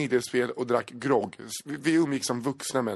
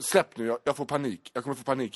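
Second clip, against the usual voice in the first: ordinary talk, nothing marked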